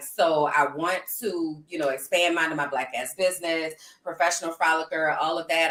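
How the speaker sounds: plain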